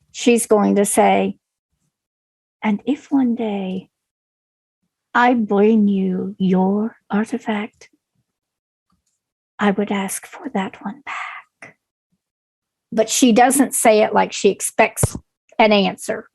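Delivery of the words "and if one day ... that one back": very low, secretive, hushed murmur. Narrator voicing a character who leans in to speak privately in Orcish, very low quiet tone. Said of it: "again in a very low tone where she's hoping nobody else in the room actually does hear it".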